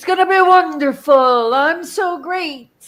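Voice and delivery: drawn-out, slow, high-pitched boastful voice. Doing a Trump impression for the others, Trump impression. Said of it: "I'm gonna do my Trump impression".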